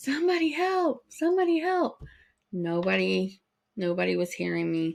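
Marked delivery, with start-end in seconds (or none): 0.0-2.0 acted, very high-pitched screaming. Retelling being alone with an injured brother and nobody coming: imitating someone screaming for help. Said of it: "I'm screaming".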